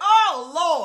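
very loud, high, shrill yelled outburst. Recalling a game cutscene, the speaker reenacts their own reaction, retelling a yell. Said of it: "like literally yelled".

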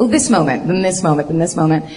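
ordinary talk, nothing marked

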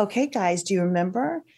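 calm, even flight-attendant voice. A mom demonstrates the voice she uses in tense moments: calm flight attendant voice. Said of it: "I go to what I call my flight attendant voice".

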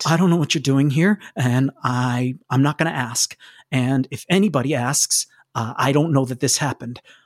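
low muttered voice. Narrator voices Josh telling the group what's happening: muttering under his breath. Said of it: "he starts muttering under his breath".

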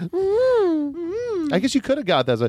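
very high, sing-song, swooping, stretched-out mm-hmm. Chatting with others about a rewatched movie, a speaker slips into a Chicken Lady voice. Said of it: "sounds like you're doing a Kids in the Hall character".

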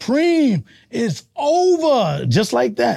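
slow high proclamation.

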